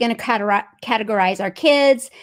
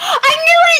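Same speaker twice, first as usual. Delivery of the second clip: shrill, very high, loud, thrilled yell; 5 dB louder than usual. Hearing someone's Myers-Briggs answer, yell. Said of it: "I didn't mean to yell".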